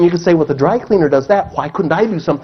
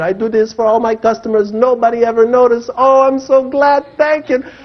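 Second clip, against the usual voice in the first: put-on heavy Arabic accent, higher pitch; 6 semitones higher than usual. Retelling a dry cleaner's grateful reply: imitating a heavy Arabic accent. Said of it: "he had a heavy accent".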